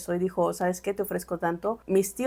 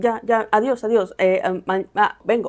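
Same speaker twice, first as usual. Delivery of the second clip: put-on flustered stammering, louder; 5 dB louder than usual. Retelling how the uncle left the empty house: imitating uncle's stammering. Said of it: "todo trabado, todo errático".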